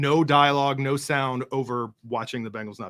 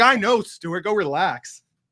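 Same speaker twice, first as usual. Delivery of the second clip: acted-out loud, high-pitched holler with words stretched out; 7 semitones higher, 5 dB louder than usual. Teasing someone for yelling while telling everyone to relax, retelling a yell. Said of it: "as you yell at Stuart".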